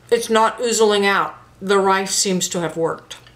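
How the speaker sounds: speaking with a mouthful of food. Having just bitten into the pastry, the speaker reports back, talking with mouth full. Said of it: "I got a big old mouthful of pastry".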